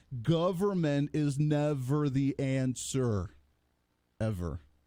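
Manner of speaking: very slow, deliberate delivery, each word spaced out. Speaker addressing the other side of the aisle, really, really slow. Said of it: "let me talk really, really slow".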